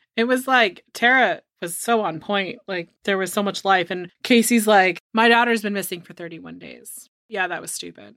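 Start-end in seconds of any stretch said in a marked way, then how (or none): 5.2-7.1 dead, emotionless, flat, lifeless monotone drone. Mocking how Casey spoke about her missing daughter, in a flat monotone. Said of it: "She's so monotone".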